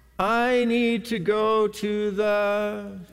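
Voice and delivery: put-on sleepy child voice. Telling parents about a little one waking at night: imitating a sleepy child. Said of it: "very sleepily say".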